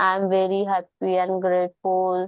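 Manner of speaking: flat lifeless delivery with no energy. Showing how not to say an affirmation: flat, no energy. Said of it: "ऐसे नहीं, नो energy, nothing.".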